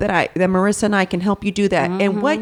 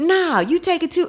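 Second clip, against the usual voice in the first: put-on angry voice, higher pitch; 8 semitones higher than usual. Retelling a grocery store scene, imitating someone pissed off. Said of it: "And she was pissed".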